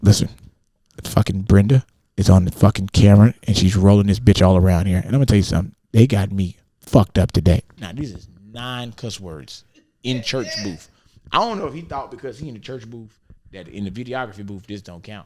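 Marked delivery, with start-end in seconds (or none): 0.0-7.6 put-on whispering voice. Retelling a phone call made in the church booth: imitating someone whispering. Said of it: "Then he starts trying to whisper".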